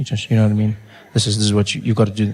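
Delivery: low, secretive, confiding voice. Showing how to speak in a confidential voice, as he was told to, softly. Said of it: "you talk like this".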